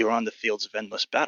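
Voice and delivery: whispered speech. Voicing a crouched creature leaning close to a player's head: whispering. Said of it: "and whispers to you".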